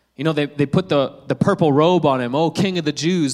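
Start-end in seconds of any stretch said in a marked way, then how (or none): none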